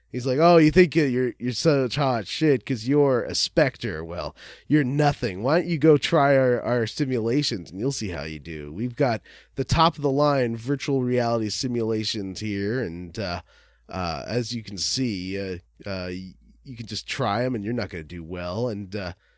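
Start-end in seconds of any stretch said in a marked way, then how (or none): none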